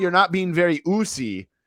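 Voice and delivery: put-on, high-pitched scolding yell. Retelling Sami Zayn yelling at Jay: imitating Sami Zayn yelling. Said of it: "he's, like, yelling at Jay, saying".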